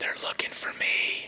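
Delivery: soft, unvoiced whisper.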